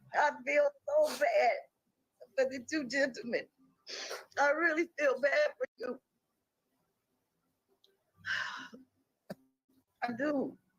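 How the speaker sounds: tearful speech, crying while talking. Answering a question about what weighs on you most, crying while talking. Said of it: "That's why I'm crying right now".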